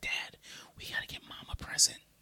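soft, breathy whisper under the breath. Father retelling his daughter reminding him about Mother's Day, imitating a whisper. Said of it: "my daughter kept like whispering".

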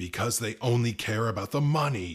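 bellowing at full force, very loud roar. The new guy answers a question in a heated exchange; roaring. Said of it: "the new guy roared".

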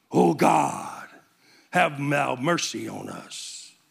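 affected, over-pious, slow, creaky, exaggerated praying voice. Mocking people who change their tone to pray, affected pious praying voice. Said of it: "changing the tone of their voice to sound more pious".

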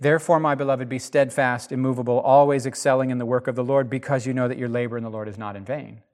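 ordinary delivery

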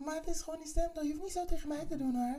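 very high, quick put-on voice.

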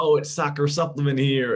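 fake American accent, loud and high. Mimicking players at a West Ham photo shoot; put-on American accent. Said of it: "putting on their best American accents".

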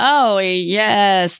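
sarcastic tone. Speaker in office for a month, answering why it isn't done, sarcastic. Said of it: "That's sarcasm".

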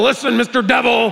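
tough rasp, rough and authoritative. Retelling trying to be tough with a dog, retelling raspy, authoritative talk. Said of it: "all the rasp I get".

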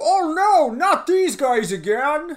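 very high, very loud blockbuster movie style delivery. Quoting movie lines to the others: Brendan Fraser impression. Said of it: "your impression of Brendan Fraser".

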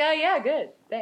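put-on bored, unenthused, offhand delivery. Retelling a young boy's reply during a seance: imitating an unenthused reply. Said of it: "he's so unenthused".

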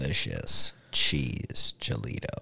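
deep put-on radio announcer voice. Talking up the family Mexican restaurant in a deeper put-on voice. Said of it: "You think I was trying to get a little deeper with the voice here?".

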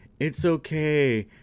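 tearful, sobbing, blubbering words. Retelling a story where the troll answers her apology, imitating a troll crying. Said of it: "And he's like crying".

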